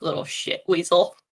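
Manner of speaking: low, grumbled mutter under the breath. Playing a character in a tabletop game, muttering under the breath. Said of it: "Under my under my breath, I go".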